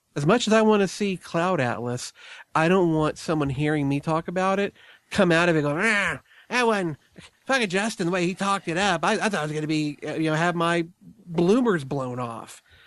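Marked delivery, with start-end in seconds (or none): 5.8-12.6 put-on cranky, grumpy old man complaining. Imitating a disappointed listener of the show: imitating an angry old man. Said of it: "imitation of our listeners is an angry old man".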